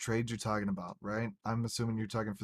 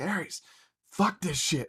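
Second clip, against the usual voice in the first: put-on fed-up, angry outburst, raised and high; 7 semitones higher, 6 dB louder than usual. Retelling what a friend said when he got pissed off: imitating Tama pissed off. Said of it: "he gets real pissed off and he's like".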